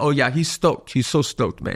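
put-on mimicked Filipino accent. Quoting a woman the hosts find cute, in a put-on Filipino accent. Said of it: "Filipino accent too".

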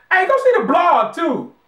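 very high, loud, irritated, angry outburst. Signing off a podcast, a co-host tells listeners to go see the blog, angry. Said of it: "You sound angry, man".

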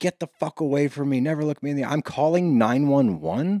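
mild, reined-in, heated put-on yell. Retelling how she turned on him: retelling someone screaming. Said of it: "starts screaming".

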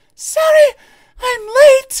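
high, loud, breathless, puffing and winded. A late engine arriving at the platform speaks, panting. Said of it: "Percy panted".

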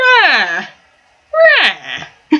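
squawky, swooping, parrot-like bird-call cries. Acting out a woman's reaction, the speaker squawks like a parrot.

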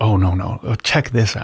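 a bit whispered, soft, close-up voice. Showing the companion-like show voice close to the mic: a bit whispered, close. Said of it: "a bit whispered, a bit close".

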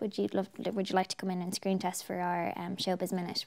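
ordinary delivery

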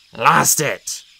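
growling in disappointment. A cat loses the squirrel it chased up a birch: disappointed growl. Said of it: "Greypaw growled in disappointment".

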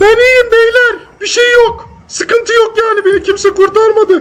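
very high put-on girly voice. Streaming a game, pretending to be a girl to other players, imitating a girl's voice. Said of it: "Dur kız taklidi yapayım".

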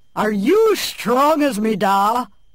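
big, loud, booming babe voice. A young babe out of the cradle speaking to a guest, in a booming voice. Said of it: "What a booming voice in such a young babe".

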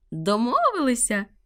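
happy, joyful, high shriek. An eagle accepts Elly's offer of help, joyful shriek. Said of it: "радісно заверещав орел".

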